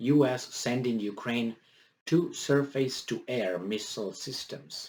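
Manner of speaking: normal talking voice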